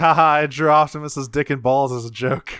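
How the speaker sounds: ordinary delivery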